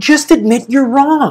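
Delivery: play-acted, slow, drawn-out scream, every word deliberate. Retelling an argument with a car passenger after a near miss on a bike path, imitating screaming. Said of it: "And I'm screaming this on the street".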